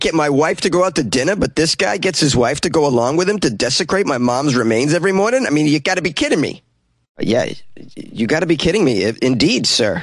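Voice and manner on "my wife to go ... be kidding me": put-on New Jersey accent, pitched up, held throughout. Ranting about a guy and his wife every morning, in a new jersey accent. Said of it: "That was a pretty good Jersey accent there".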